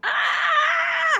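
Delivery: high, loud scream. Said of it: "Are you screaming?".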